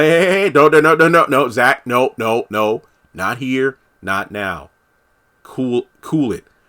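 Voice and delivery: restraining, pleading, calming tone. Retelling how Fatima holds Zach back: imitating Fatima holding Zach back. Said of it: "Fatima's the one who has to kinda hold Zach back".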